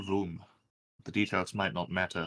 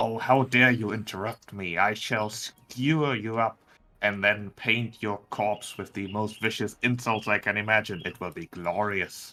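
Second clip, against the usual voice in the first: loud hiss through gritted, clenched teeth; 5 dB louder than usual. A game master voicing a ghoul turning on Dancer: hissing through clenched teeth. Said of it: "hisses through clenched teeth".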